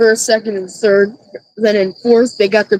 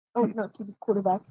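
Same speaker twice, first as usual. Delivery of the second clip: ordinary talk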